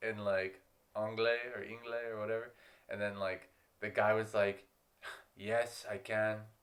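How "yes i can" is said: words heaved out on a heavy sigh. Retelling a reply from a guy at the train station: imitating a sighing reply. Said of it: "with a sigh".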